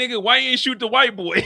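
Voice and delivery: high, loud exclamation. Retelling a scene from the episode: imitating Kane's reaction. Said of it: "Kane was in the car like".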